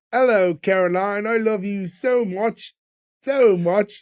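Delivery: very bad British accent, drawn out and slow. Recapping a flashback, the speaker quotes Nick, drunk, calling Caroline: Nick's bad British accent. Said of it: "doing like a very bad British accent".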